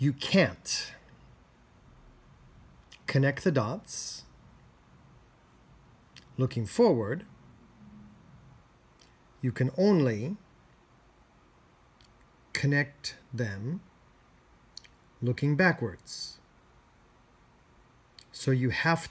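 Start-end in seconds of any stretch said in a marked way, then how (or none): 0.0-16.4 slow, careful, deliberate reading-aloud pace. Reading a speech aloud for listeners to repeat after, reading slowly. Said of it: "First I'll read slowly so you can repeat".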